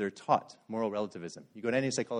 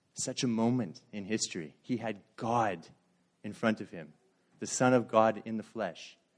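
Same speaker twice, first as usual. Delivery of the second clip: ordinary delivery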